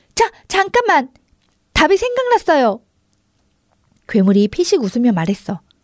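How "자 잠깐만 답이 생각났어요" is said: high-pitched, urgent shout. Koko calls out to the monster, urgent shout. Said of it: "나는 다급하게 괴물에게 소리쳤어".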